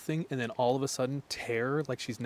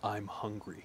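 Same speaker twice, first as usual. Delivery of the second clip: put-on dark voice, quieter; 3 semitones lower, 8 dB quieter than usual. Retelling a phrase he said on the phone, in a dark voice. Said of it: "in a dark voice".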